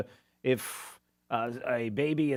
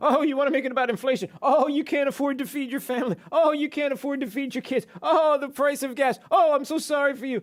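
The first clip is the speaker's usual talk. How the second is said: put-on mocking tone, higher pitch; 12 semitones higher, 6 dB louder than usual. Acting out a man who is mocking people, imitating his mocking tone. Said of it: "Mocking people".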